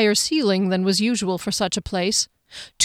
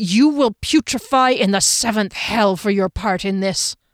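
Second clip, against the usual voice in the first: growling, pointed delivery. Reading a story, a man points at another man and growls his line. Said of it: "he growled".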